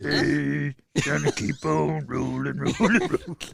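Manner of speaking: loud, rough holler in a cartoon voice. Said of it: "Do [name] doing Fat Albert".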